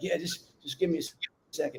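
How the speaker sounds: soft, quiet, winded, dazed, catching breath.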